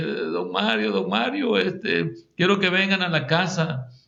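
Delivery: put-on weeping woman's voice, tearful, crying, pleading. Retelling what a crying woman said to him a month ago, imitating a crying woman. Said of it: "que lloraba una señora".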